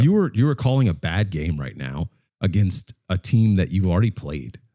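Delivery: ordinary delivery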